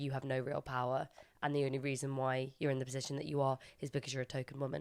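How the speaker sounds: plain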